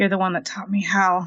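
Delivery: hushed whisper, muttered under her breath. Playing a character who hears voices and whispers to herself. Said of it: "She whispers to herself".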